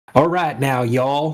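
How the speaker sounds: non-native speaker's attempted Southern US accent. Retelling how a woman with barely any English tried a Southern accent. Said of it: "trying to do her best Southern accent".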